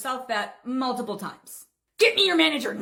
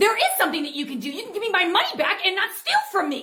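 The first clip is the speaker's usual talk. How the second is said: high, irate, angry yelling; 8 semitones higher than usual. In a skit, an irate customer demanding a refund shouts angrily at an employee. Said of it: "You're not gonna stand here and shout at me".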